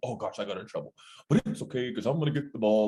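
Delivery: rushed dog inner voice, human-sounding. Picturing the other speaker's dog talking, in an imagined dog inner voice. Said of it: "your dog be like".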